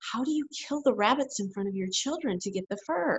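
soft, confidential, hushed half-whisper. Retelling a question a lady at a farmers market half-whispered: imitating someone half-whispering. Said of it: "she leaned over and she whispered".

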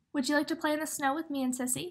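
plain reading voice

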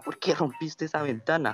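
acted-out high, shrill, loud yell. Telling how a friend's mother chased him down the block, retelling a mother's yell. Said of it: "le empezó a gritar en toda la cuadra".

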